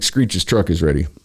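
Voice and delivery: ordinary talk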